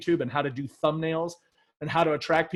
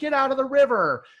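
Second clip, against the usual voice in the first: very high-pitched, shrill, scolding yell; 9 semitones higher, 4 dB louder than usual. Retelling how a woman behind them yelled at her kids: imitating a woman yelling. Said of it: "she's over me yelling at her kids".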